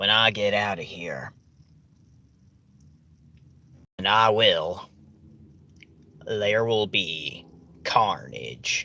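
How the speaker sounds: exaggerated, laid-on-thick Southern accent, low pitch. Retelling a movie villain's line: imitating exaggerated southern accent. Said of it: "he has the exaggerated Southern accent".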